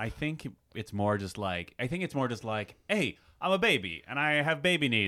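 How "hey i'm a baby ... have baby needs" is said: clipped tough-guy voice, higher and louder. Voicing a talking baby: clipped Bruce Willis voice. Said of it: "a clipped Bruce Willis kinda way".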